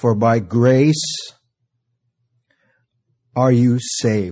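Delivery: very slow, deliberate, drawn out word by word. Speaker reading a verse aloud to the audience, very slowly. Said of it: "I'm going to read this real slow for you".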